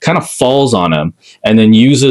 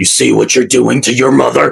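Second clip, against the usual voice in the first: rough, creaky voice borrowed from a movie character; 3 semitones higher than usual. Recounting a movie scene, quoting the mom's line; movie character impression. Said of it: "you did it in that voice".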